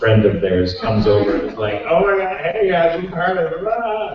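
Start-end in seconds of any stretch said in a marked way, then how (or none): 1.9-4.2 put-on sloppy, falling-down-drunk slur, slow and slurred. Retelling a fan's drunk friend coming over at a signing: imitating sloppy drunk speech. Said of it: "just completely sloppy, falling down drunk".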